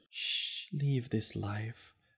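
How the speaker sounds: hushed, very soft, barely-there whisper. Novi, hands on a pleading man's head, whispering.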